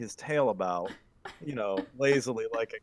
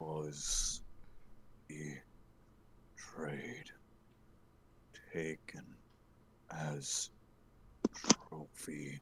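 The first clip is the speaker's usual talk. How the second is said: halting, slow, gloomy, dour whisper, nearly monotone; 9 semitones lower, 14 dB quieter than usual. Voicing a character asked why his tail is a stump, in a slow dour tone. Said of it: "answers in his slow, doldrum tone".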